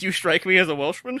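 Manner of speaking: plain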